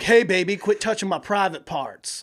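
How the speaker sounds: put-on Southern accent. Imitating a loud man in a movie theater: imitating in a southern accent. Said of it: "Was he Southern?".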